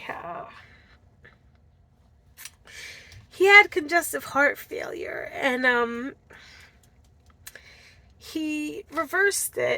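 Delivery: talking through it while holding back tears. Sharing a story from a YouTube video, trying not to cry. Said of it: "I'm trying not to cry".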